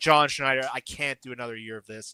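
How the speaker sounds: normal talking voice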